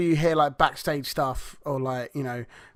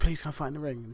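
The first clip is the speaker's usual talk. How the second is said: put-on begging voice, somewhat quieter; 6 dB quieter than usual. Retelling a wrestling storyline, imitating Tajiri begging. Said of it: "Tajiri was begging to go and fight him".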